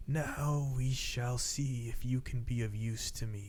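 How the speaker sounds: slow, unhurried, rasping voice. Narrating a figure gripping an estate window frame, speaking to the party: raspy voice. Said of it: "you hear in this sort of like raspy voice".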